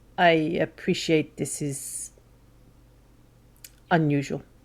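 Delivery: very quiet, hushed, barely above a murmur. Sitting down on a bench across from someone, the character speaks very quietly. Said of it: "very quietly goes".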